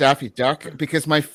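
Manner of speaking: normal talking voice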